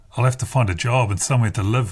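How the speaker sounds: ordinary delivery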